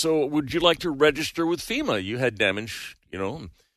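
ordinary talk, nothing marked

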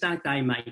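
rough, coarse, put-on Australian accent. Contrasting Australian speech with New Zealanders': put-on Australian accent. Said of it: "Australians talk more like this".

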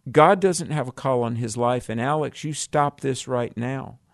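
ordinary talk, nothing marked

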